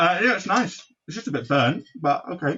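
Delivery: high, mumbled, chewing through a full mouth. Eating a hot cross bun while answering a question, talking with mouth full. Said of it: "with your mouth completely full".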